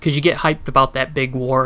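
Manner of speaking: ordinary talk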